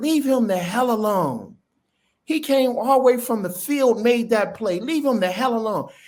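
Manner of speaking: put-on screaming. Retelling how the head coach yelled at the defensive coordinator: imitating head coach screaming. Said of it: "the head coach started screaming at him".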